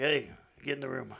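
rough, creaky, sexy, seductive voice. Imagining Sam Elliott giving an order: Sam Elliott sexy voice. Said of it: "if Sam Elliott said in his sexy ass voice".

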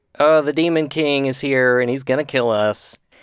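plain

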